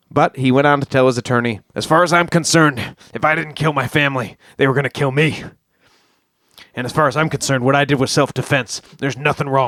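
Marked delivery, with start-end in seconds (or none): 1.8-9.5 put-on, exaggerated, extra crazy voice. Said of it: "I'm putting on extra crazy voice".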